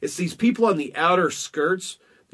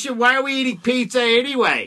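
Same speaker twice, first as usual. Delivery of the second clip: put-on high-pitched elderly woman's voice; 8 semitones higher, 3 dB louder than usual. Mimicking the woman in the corner, in an old lady voice. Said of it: "I don't know why she sounded like an old lady".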